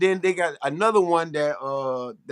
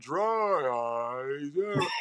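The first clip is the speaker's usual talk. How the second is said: put-on slow drawling voice, lazy, dragged-out words; 6 dB quieter than usual. Imitating a lecture teacher who sounded like a commercial guy: imitating slow dragged-out speech. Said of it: "dragging his words out real slow".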